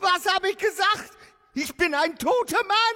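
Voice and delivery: very high, frantic, worked-up, terrified panic. Renfield cries out to the doctor, agitated and panicking. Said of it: "Jetzt beruhigen Sie sich".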